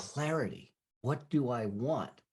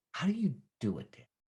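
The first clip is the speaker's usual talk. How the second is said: put-on acted, near-tearful, almost crying little boy voice; 3 semitones higher than usual. Father retelling his young son coming to him, imitating son near tears. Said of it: "almost in tears".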